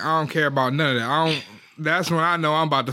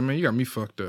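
scary, eerily calm, far-too-calm voice; 3 semitones lower, 4 dB quieter than usual. Describing warning signs, speaker acts out the line: put-on, too-calm voice. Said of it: "Even if you say it in a calm, too calm voice, like".

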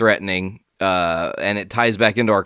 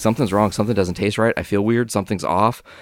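ordinary talk

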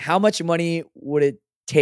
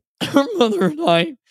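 put-on very high, choked-up, tearful voice; 12 semitones higher than usual. Retelling what a man said when he did it for real, imitating someone choking up. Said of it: "he was all choked up and like trying to hold back tears".

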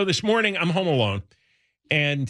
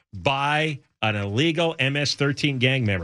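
usual speaking voice

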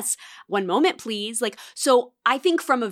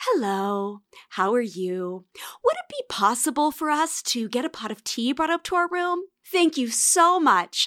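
polite customer service telephone voice; 3 semitones higher than usual. Retelling her teasing about how the speaker calls down to the hotel: customer service phone voice. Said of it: "What is this customer service phone voice?".

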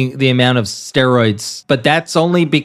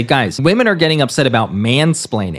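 usual speaking voice

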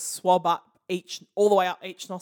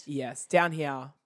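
deeper voice, lower pitch; 4 semitones lower, 3 dB quieter than usual. Answering another speaker who notices the drop: lower pitch. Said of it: "You went down in pitch as you said that".

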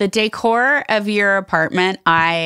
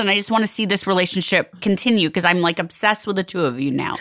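usual speaking voice

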